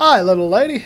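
loud, bad, terrible put-on silly voice. Gamer voicing a game character's greeting, in a terrible put-on voice. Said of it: "That was a terrible voice".

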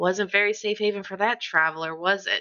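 soft, quiet sarcastic whisper. In a tabletop game, leaning down to another character's ear, a quiet sarcastic whisper. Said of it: "whisper very quietly ... Like very sarcastically".

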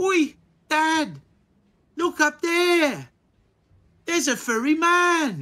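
put-on very high small child's voice. Game master voicing a child who points something out, in a little child's voice. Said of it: "you hear a little voice point out to you".

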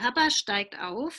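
ordinary delivery

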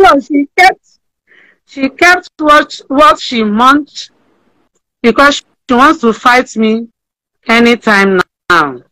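halting voice on verge of crying, breaking up. Talking about a woman who sent her money, the speaker is close to tears. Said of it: "Don't cry".

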